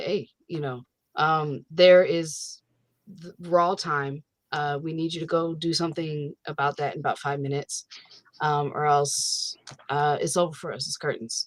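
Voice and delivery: flat, chill, matter-of-fact, nonchalant deadpan. Retelling a character's urgent warning: imitating a deadpan, chill delivery. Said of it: "so deadpan and chill".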